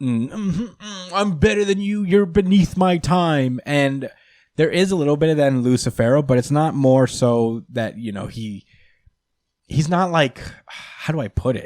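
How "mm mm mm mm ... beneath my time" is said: high, smug anime villain voice. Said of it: "villains that are like".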